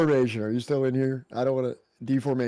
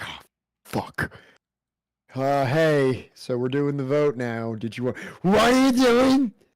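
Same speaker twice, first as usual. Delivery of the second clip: put-on tipsy, drunk-sounding talk; 2 semitones higher, 4 dB louder than usual. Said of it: "kicks in the door, like, drunk".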